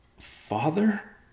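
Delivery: frightened, fearful, very high, small voice. Riverpaw calls to his father the next morning, fearful. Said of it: "asked with fear in his voice".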